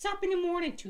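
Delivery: put-on leprechaun voice. Urging someone to try a voice, demonstrate it yourself: leprechaun voice. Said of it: "Go for a leprechaun".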